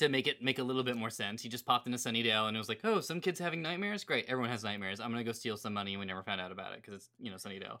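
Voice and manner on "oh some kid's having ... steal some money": ordinary talk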